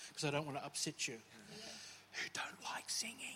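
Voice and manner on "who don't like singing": drawn-out, slow, hushed whisper. Speaking to Pastor Julie, whispering so as not to upset her. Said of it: "I'm going to say this as a whisper".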